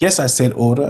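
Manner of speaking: ordinary talk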